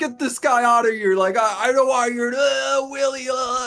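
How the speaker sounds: put-on, angry yelling voice. Retelling a call where he was screaming and kicked someone out: imitating Gideon yelling. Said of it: "why are you yelling?".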